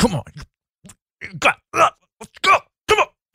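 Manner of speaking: very high, intense, pumped-up psyched-up voice. Acting out the inner voice before a pole vault: acting out intense psych-up. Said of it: "a really intense, like, psych up game".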